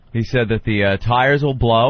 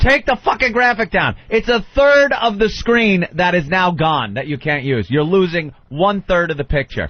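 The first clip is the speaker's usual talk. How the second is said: put-on scream, higher pitched; 6 semitones higher than usual. Retelling what was yelled at the TV: imitating someone screaming. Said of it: "I'm just screaming at the T V".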